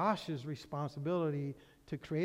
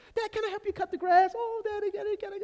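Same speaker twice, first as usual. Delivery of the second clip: put-on eager little boy voice, much higher; 5 dB louder than usual. A father acting out his young son asking to help, imitating an eager little boy. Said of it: "he's just loving it".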